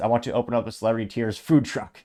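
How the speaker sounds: plain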